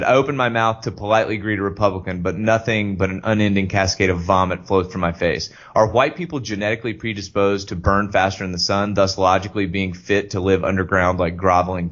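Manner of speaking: ordinary talk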